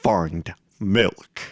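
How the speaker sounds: very deep, cavernous, echoey voice. Showing an imagined game command in a very deep, echoey voice. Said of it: "a very, very deep voice in my head, kind of echoey".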